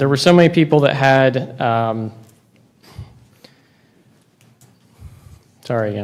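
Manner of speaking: anxious, nervous, hesitant speech. Explaining rising land costs and losing the thread mid-sentence: nervous. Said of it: "I'm just nervous".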